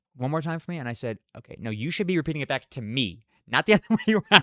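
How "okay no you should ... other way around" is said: acted heated, mad, angry tone. Retelling a reply to a slow drive-thru worker: retelling an angry reply. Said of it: "So I was getting very, very mad".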